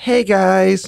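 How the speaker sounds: light semi-feminine voice. Comparing voices with the others, imitating own greeting: semi-feminine voice. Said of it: "a semi-feminine voice".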